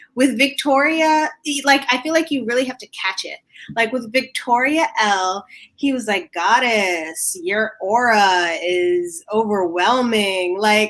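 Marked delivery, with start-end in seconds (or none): 6.3-10.6 put-on, very slow, drawn-out sarcastic flattery. Retelling what a contestant said to another contestant: imitating a sarcastic compliment. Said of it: "that was very sarcastic".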